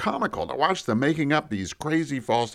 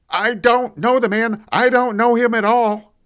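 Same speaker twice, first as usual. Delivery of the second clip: very loud, high, desperate, panicked shouting; 8 semitones higher, 8 dB louder than usual. Retelling yelling out in panic near the gate: retelling a panicked yell. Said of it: "so I yelled out".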